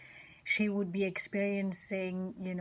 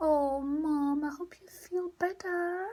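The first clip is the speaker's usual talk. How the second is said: play-acted, high, syrupy, overly sweet worried tone; 9 semitones higher than usual. A mother retells what she was told as she was leaving, imitating sugar-sweet concern. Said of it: "her voice was so full of concern and so sugar sweet".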